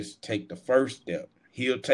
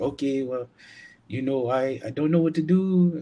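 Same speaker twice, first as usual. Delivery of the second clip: put-on Mexican woman's accent, pitched up; 5 semitones higher than usual. Retelling what a lady said to the speaker: imitating a Mexican accent. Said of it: "I think that's the Mexican accent".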